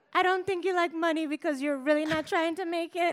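put-on Grenadian accent. Quoting what a mother said, as told in a book: fake Grenadian accent. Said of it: "fake Grenadian accent".

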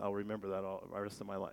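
normal talking voice

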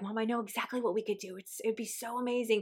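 acted-out eager, thrilled girl's voice, hushed gushing. Mother retelling her 12-year-old daughter's idea for their date, imitating excited daughter. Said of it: "she was so excited".

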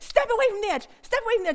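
put-on panicked pleading tone. Retelling how she urged tourists posing for photos away from the edge, retelling her own panicked pleading. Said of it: "I am saying".

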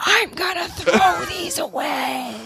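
very slow, high, drawn-out full stage whisper. Retelling what someone mouthed while carrying a box in: imitating Justin's stage whisper. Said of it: "full stage whisper voice".

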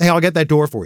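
rushed, hurried delivery. Retelling offering to open a door for a man: retelling a hurried remark. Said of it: "I was in a hurry".

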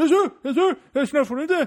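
high, loud, mock outraged ranting voice.

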